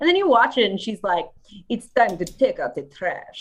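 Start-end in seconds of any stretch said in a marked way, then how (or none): 1.7-3.4 bad, fumbling put-on Italian accent. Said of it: "she's Italian. I can't do it".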